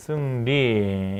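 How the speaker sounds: very slow, drawn-out model pronunciation of 승리. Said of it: "이렇게 쓰시면 돼요".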